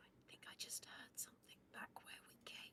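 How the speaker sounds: quiet, breathy whispering. A player's character speaking to the group in a corridor: whisper. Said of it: "I just whisper whisper to everybody".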